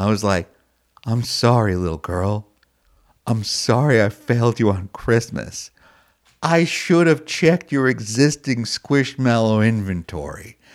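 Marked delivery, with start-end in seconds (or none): 1.1-10.6 sincere, earnest, non-sarcastic heartfelt tone. Recalling apologizing to a little girl over a christmas gift, retelling a sincere apology. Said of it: "there's no sarcasm in my voice".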